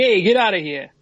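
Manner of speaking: put-on New York accent. Retelling what a judge said when throwing out a lawsuit, New York accent. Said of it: "That's my New York accent".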